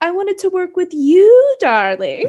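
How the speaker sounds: high, loud, swooping theatrical delivery. Quoting a remembered interview line: Judi Dench impression. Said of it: "have to do my impression of Judy".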